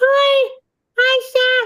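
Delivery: very high-pitched, squeaky soprano voice. Imagining someone whose voice is like a first soprano: very high-pitched voice. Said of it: "their voice was like uh, first soprano Memorex?".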